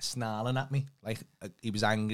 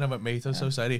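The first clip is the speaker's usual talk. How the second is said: put-on speech while laughing. Retelling an apology to a heckler: imitating laughing while apologizing. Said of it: "I was, like, laughing".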